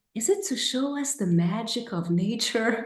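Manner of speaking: put-on quiet, soft, low voice. Retelling a shy kid's question in a theater: imitating a quiet, low voice. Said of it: "very quietly with a low voice".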